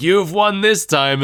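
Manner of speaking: high-pitched, shouted villain voice. Recapping how Pyron yells at Klaus, speaker imitates Pyron yelling. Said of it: "He's like".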